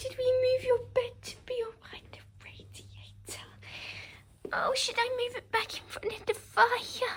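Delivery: very high cutesy voice. Speaking to your dog during a video, in the dog voice. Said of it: "Sorry about the dog voice".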